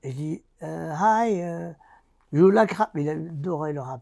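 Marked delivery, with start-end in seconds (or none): 0.9-2.9 put-on thick French accent, slower. Retelling his own past words in English, thick French accent English. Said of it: "un accent à dormir debout".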